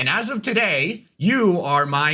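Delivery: forceful, overwhelming, loud, powerful commanding voice. A game master voices a mysterious voice to the players, loud and powerful voice. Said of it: "It is loud and it is also powerful".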